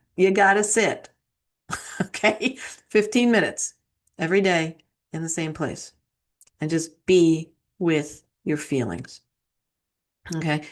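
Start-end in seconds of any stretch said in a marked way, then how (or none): 0.2-2.6 put-on New York accent. Telling threes they have to sit to meditate, said again in a best New York accent. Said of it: "I say that in my best New York accent".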